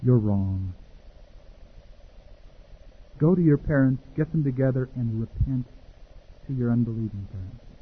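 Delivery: gentle, mild, soft voice. Recalling the words of the Holy Spirit coming into his heart, quoting a gentle voice. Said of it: "the gentle voice of the Holy Spirit".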